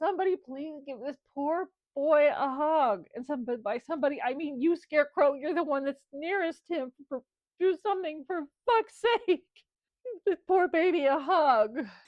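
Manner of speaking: imitated sobbing. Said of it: "I just start crying like a baby".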